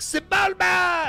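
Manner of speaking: very high, shrill hollering yell. Telling a story about being asked to play, re-enacting the shout: retelling a yell. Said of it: "I'm like yelling this".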